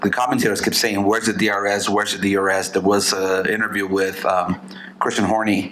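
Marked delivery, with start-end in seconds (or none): none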